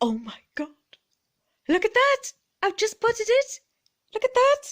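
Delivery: excited, very high voice, climbing and swooping in pitch. In a Feel Good Friday vlog, spotting a new leaf, very high excited voice. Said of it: "Sorry, very high voice".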